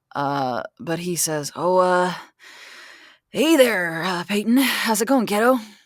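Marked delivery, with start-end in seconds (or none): 1.5-5.5 awkward, halting, uncomfortable, pitched-up delivery. Voicing an old forest ranger greeting someone: uncomfortable. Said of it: "looks extremely uncomfortable".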